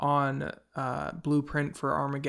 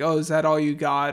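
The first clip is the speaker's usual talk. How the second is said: usual speaking voice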